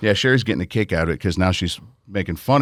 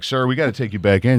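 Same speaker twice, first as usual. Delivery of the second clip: plain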